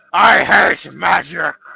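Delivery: booming, loud, rough growl of rage. Game master voicing the enemy the player just attacked; growling in anger. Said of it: "he growls in anger as he says".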